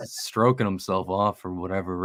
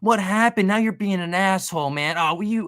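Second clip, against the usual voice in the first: very high, whiny mock voice, whined way up. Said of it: "he's like".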